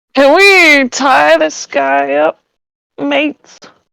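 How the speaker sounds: put-on American-tinged Australian accent. A player taking a turn in a game, speaking in character, attempted Australian accent. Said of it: "suddenly an American Australian".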